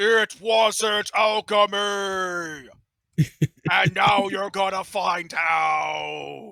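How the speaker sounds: very loud, high, distant booming call. Imagining the walking cauldron a hundred years on, calling from the distance: booming voice. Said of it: "there's just gonna be this booming voice".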